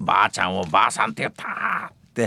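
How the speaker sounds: wailing, tearful sobbing, swooping pitch. Retelling how they confessed to a teacher, imitating crying while confessing. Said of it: "おーわーって泣きながら".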